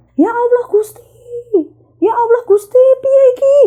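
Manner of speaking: shrill, very high, loud woman's yell. Retelling hearing a woman outside the house: imitating a woman shouting. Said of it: "orang teriak-teriak".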